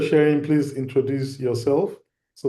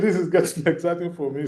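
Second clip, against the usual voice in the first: talking through laughter, higher pitch; 4 semitones higher than usual. Reacting to a participant's answer, laughing while talking. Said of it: "Sorry, I'm laughing".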